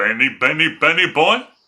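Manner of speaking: booming, very loud cartoon cat voice. Speaker showing the one cartoon voice he can do: Top Cat voice. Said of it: "So Top Cat would go".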